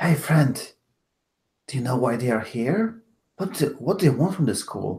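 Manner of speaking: whispered line in character. Playing a character looking out a window, asking a friend: whispering in character.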